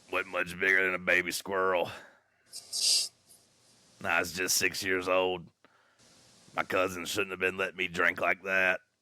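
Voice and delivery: acted southern drawling voice. Retelling a childhood story in imitation: Billy Bob Thornton voice. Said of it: "I could never do that voice".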